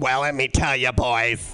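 low, slow, raspy madman voice. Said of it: "Talk like raspy madman secretary who has seen all".

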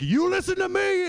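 put-on shrill, high-pitched yelling voice. Telling how a man yelled after the speaker skating away, retelling his yell. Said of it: "he's just yelling at me as I go away".

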